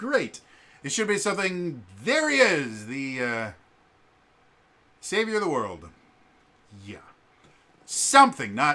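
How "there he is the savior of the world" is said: dry, mocking sarcasm in swooping sing-song. Showing how the line should have been delivered: sarcastic. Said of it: "it's supposed to be sarcastic".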